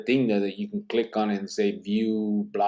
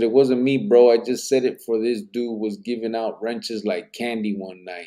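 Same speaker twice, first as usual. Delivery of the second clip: ordinary talk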